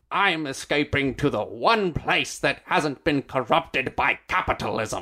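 over-the-top, exaggerated fake Russian accent, laid on thick. Recreating a Tim Curry video game line, in Tim Curry's bad Russian accent. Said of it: "my best recreation of this Tim Curry line. Which is him doing a bad Russian accent".

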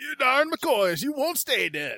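high, slow, exasperated cursing tone.

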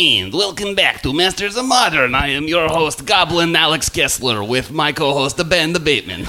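clumsy fake Russian accent. Podcast host welcoming listeners back and introducing his co-host, in a bad Russian accent. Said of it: "you certainly sound like a bad Russian accent".

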